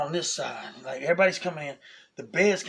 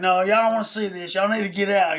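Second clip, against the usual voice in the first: put-on yell, higher and louder; 5 semitones higher, 6 dB louder than usual. Retelling telling parents to leave the room: imitating own screaming. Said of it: "I'm screaming".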